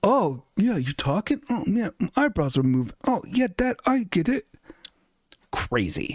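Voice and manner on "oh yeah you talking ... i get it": put-on high, sarcastic sitcom-kid voice. Imitating the kids on the couch in a recycled sitcom clip: mocking imitation of sitcom kids. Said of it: "clip of the kids, like, on the couch being like".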